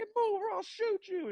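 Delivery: put-on very high, shrill child's shriek. Retelling a video of a kid at the park: imitating a kid screaming. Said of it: "screaming at him".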